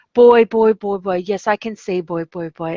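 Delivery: mocking, parroting repetition of the word. Retelling how a man mocked the speaker the whole time, imitating mocking repetition. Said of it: "he was mocking me the whole time".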